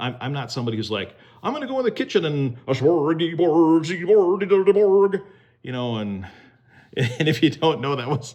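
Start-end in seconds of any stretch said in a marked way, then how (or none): 1.4-5.2 high, loud, slow, drawn-out gibberish. Talking about not liking to cook, breaking into a Swedish Chef impression. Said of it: "my impersonation of the Swedish chef from the Muppet Show".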